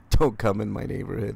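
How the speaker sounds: ordinary talk, nothing marked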